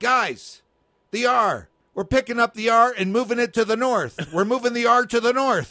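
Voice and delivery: play-acted high, hollered, yelled-out delivery. Retelling how he yelled out instructions to the guys: retelling a yell. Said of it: "he just yelled it out".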